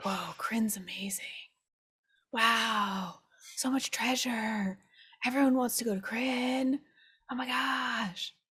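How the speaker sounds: whisper in a character voice. Using psychic whispers to tell the Beholder about Kryn: psychic whisper to the Beholder. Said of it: "try to whisper to the, um, to the Beholder".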